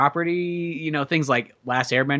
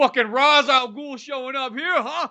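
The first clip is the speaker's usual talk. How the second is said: put-on Brooklyn accent, pitched high; 10 semitones higher, 3 dB louder than usual. Speaker voicing a Gotham City local complaining about a villain, Brooklyn accent. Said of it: "you're fucking like in Brooklyn".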